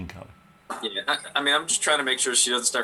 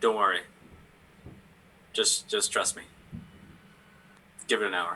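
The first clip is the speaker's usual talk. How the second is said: hushed whispering. As Vinny in a role-play, answering her in a whisper. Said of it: "so I'm just gonna whisper to her".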